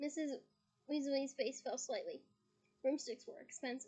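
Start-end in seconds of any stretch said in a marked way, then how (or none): none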